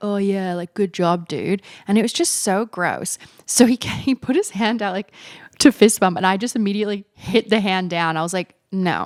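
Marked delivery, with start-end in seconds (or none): 0.0-1.6 mock weird masculine macho voice. Speaker mocks a guy's fist-bump praise in a mock weird masculine voice. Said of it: "weird, like, masculine".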